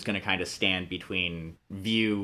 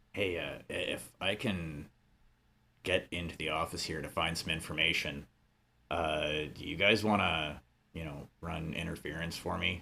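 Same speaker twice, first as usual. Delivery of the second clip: voice kept down a bit, quiet; 3 semitones lower, 7 dB quieter than usual. Reginald speaking to the group, lowering his voice a bit. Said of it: "Reginald's gonna kind of lower his voice a bit".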